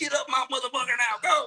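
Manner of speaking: high, fast, screaming drill instructor yell.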